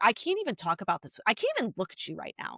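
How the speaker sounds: put-on mad, offended disbelief, swooping outburst. Retelling own reply to parents who disliked a show: retelling own angry words. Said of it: "I was so mad".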